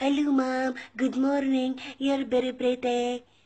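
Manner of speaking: put-on Filipino-English accent. Imitating how a Filipino person talks, imitating a Filipino speaker. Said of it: "The Filipini is talking like this".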